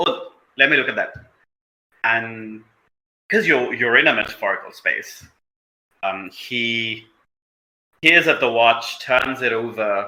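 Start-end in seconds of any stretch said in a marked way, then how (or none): 0.0-1.1 put-on quick Indian accent. Narrating a scene and voicing Zajidan, in an Indian accent. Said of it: "Zajidan speaks in an Indian accent".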